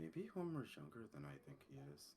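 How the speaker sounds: very quiet, low mutter under the breath. Playing a character making a private remark about another: muttering under his breath. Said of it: "kinda mutters under his breath".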